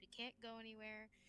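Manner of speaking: muttering under breath. Voicing a frustrated character rubbing her temples: muttering under her breath.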